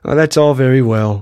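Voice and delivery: ordinary talk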